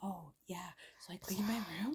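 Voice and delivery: very soft, soothing, whispery murmur.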